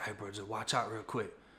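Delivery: hushed, very quiet half-whisper. Retelling how a man leaned in and warned him: imitating a half-whisper. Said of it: "whispers in my ear".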